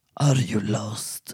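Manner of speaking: very deep, dark voice, pitched very low. Narrator voicing a man who steps out of the shadows; dark deep voice. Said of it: "sa med mörk röst".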